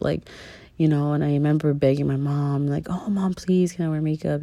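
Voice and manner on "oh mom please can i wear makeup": plain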